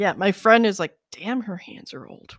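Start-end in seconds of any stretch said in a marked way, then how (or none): 1.1-2.4 hushed, soft whisper. Retelling what a friend said more to herself: imitating a friend whispering. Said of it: "she kinda whispered it more to herself".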